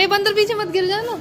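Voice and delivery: loud, high-pitched calling out.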